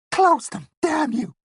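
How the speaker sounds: high-pitched muttering whisper. Reading fiction aloud, voicing a cowering man: high-pitched whisper. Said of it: "muttered in a high-pitched whisper".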